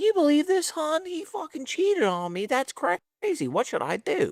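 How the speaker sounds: very high-pitched voice. Retelling how the girlfriend complained to a friend: imitating a girlfriend. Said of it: "goes to Jalen's fiance and it's like".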